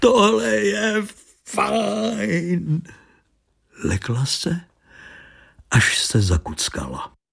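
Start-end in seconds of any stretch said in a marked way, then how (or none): 0.0-2.8 rough, very high bellow, "fajn" stretched. A man cries out to the woman holding his shoulder, roaring. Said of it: "zařval [name]".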